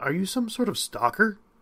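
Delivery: high, anxious, uneasy, nervous tone. A woman asks the man who knows her private details: nervous question. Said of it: "She asked nervously".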